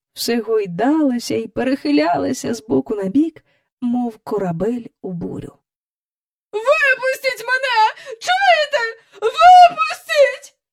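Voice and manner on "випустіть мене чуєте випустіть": shrill, very high screeching, shrieking cries. Miss Andrew, trapped in a cage swinging in the air, shrieks. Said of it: "верещала міс Ендрю".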